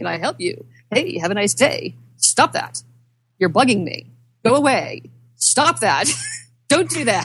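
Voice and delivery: put-on fed-up, irritated voice, losing patience, rising pitch. Retelling how a clicked game guard got annoyed: imitating an annoyed NPC guard. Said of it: "he got really pissed off at me".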